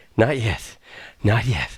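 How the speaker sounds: acted, very slow, breathless huffing and panting. Retelling being asked if ready to play a gig with a band, acting out huffing and puffing. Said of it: "I'm huffing and puffing here".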